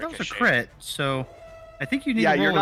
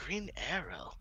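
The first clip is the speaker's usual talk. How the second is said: whispered under breath, much quieter; 3 semitones higher, 15 dB quieter than usual. A player describing aiming a bow, whispering under breath. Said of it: "I'm like whispering under my breath".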